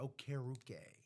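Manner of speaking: Okeruke with stress on second syllable ker. Reading out the name Okeruke with stress on the second syllable ker. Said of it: "Emphasis on care".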